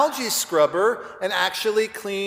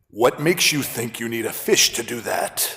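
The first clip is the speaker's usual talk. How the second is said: unusually deep, very low voice; 7 semitones lower than usual. Retelling a pet store clerk's reply, imitating a deep Darth Vader voice. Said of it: "in a James Earl style, Darth Vadery voice".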